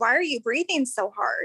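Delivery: ordinary talk, nothing marked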